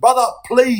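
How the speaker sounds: put-on pleading voice. Retelling what the crying wife said from the car: imitating a plea. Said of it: "she's pleading with me".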